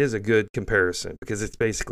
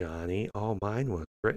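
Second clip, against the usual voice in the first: acted smug, flat, quieter voice; 8 dB quieter than usual. Mocking the hosts of a left-leaning broadcast, mocking NPR monotone. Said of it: "That's how they speak".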